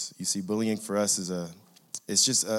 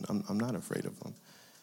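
plain

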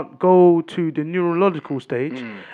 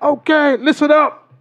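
stern, very high, loud raised voice; 10 semitones higher, 6 dB louder than usual. Acting out what they told the group, retelling a raised voice. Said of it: "I had to raise my voice".

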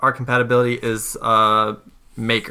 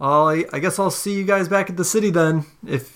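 mock, oddly sarcastic, pitched-up tone; 7 semitones higher than usual. Voicing a character calling back to others walking away: weird sarcastic tone. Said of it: "weird sarcastic thing".

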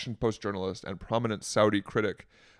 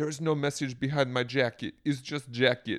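playful, laid-on, put-on Slovenian accent; 3 semitones higher than usual. Imitating the First Lady explaining her jacket: imitating Melania Trump's accent. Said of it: "it's fun to do the accent".

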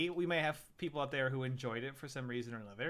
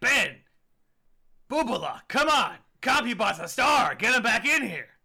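very loud, high, exasperated cigar-chomping agent voice; 9 semitones higher, 9 dB louder than usual. Suggesting how to deliver a critique, as a frustrated agent with a cigar in mouth. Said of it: "sort of a frustrated agent with a cigar hanging out of his mouth being like".

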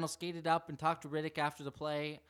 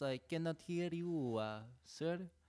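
put-on French Canadian accent, quieter; 5 dB quieter than usual. Joking about a goalie's saves, doing a Patrick Roy impression. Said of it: "my best Patrick Waugh impersonation".

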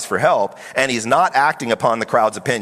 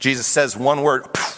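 ordinary delivery

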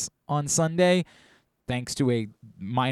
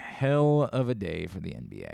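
voice pushed deep on purpose, slow, drawn out, swooping; 6 semitones lower, 5 dB quieter than usual. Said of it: "I'm trying to go deep".

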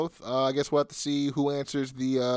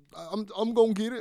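imitated crying voice, pitched higher; 9 semitones higher, 3 dB quieter than usual. Retelling how a wrestler sounded after losing: imitating Juice crying. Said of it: "Juice was super emo after".

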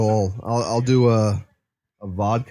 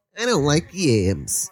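put-on female voice, higher pitch; 4 semitones higher than usual. Retelling a friend's answer about the yams: impression of Joe. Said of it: "your impression of me is Andrew Dice Clay's female voice".

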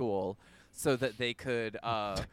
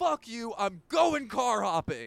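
shrill, very high, loud swooping scream; 11 semitones higher, 5 dB louder than usual. Telling a story, the speaker quotes a man mid-fight with his girlfriend: retelling a scream. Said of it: "he screams, he's like".

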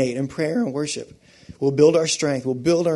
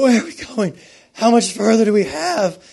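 breathless, winded, high-pitched yell; 7 semitones higher, 4 dB louder than usual. Speaker recalling calling out to their dad while winded, retelling yelling up. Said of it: "I'm like yelling up".

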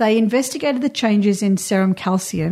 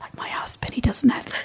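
soft, breathy, confidential whisper; 3 semitones higher, 7 dB quieter than usual. Talking about her husband while he is just upstairs, whispering. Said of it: "I'm so whispering this".

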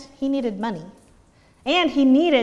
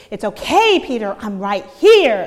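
loud, impatient, fed-up, irritated tone; 6 dB louder than usual. Retelling a young son's comforting turning impatient: imitating an irritated child. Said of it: "a more irritated".

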